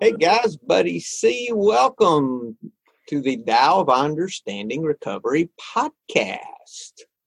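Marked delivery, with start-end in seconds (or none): 1.5-7.0 put-on on-air radio announcer voice. Opening a recovery podcast episode, the host uses his best radio voice. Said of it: "My best radio voice".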